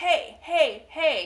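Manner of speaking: mock hollering, very loud, very high pitch. Retelling how he chased a passing golf cart along the fence line, retelling a loud yell. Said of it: "He's just yelling really loud".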